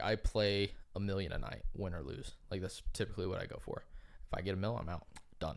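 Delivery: ordinary delivery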